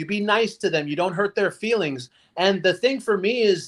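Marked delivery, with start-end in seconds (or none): none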